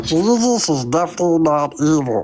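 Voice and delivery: funny cartoon voice with swooping, swinging pitch. Asked by a co-host to say a line in Meatwad's voice: Meatwad voice. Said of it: "let's say Jesus is evil in Meatwad's voice".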